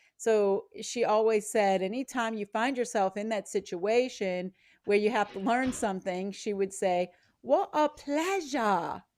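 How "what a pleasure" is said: put-on British accent, higher. Quoting a British teacher from a mastermind class: imitating a British accent. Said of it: "she has that accent".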